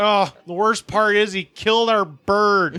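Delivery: slow Michigan drawl.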